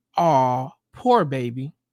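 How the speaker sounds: gentle, low, empathetic, comforting, sympathetic tone. Giving relationship advice, the speaker demonstrates a soft, low, empathetic voice. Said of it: "drop your uh your tone of voice to a soft, low, empathetic one".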